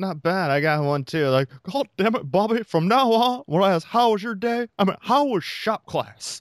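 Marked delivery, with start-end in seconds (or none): 1.6-6.4 very high, pitched-up put-on character voice. Doing a cartoon dad scolding his son: Hank Hill voice. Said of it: "Hank Hill impersonation".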